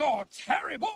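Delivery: high-pitched, angry shout. A character vents before another remarks they seem agitated; angry shouting. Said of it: "or the angry shouting?".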